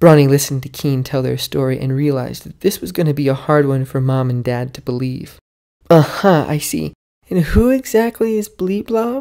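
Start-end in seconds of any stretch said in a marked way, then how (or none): 5.9-9.2 drawn-out, disbelieving, incredulous, pitched up and slow. A mother questions her child's story about a monster from a cave: incredulous. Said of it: "asked Mom incredulously".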